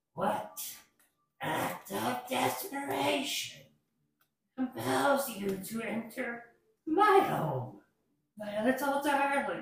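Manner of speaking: crackly voice of a toad-like creature. Voicing a toad-like creature as someone opens its door, in a crackling voice. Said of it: "the toad-like creature in a crackling voice".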